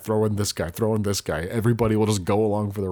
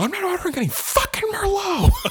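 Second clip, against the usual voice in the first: put-on screaming rant, higher pitch. Retelling a movie scene, imitating Paul Giamatti screaming. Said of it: "just screams at the top of".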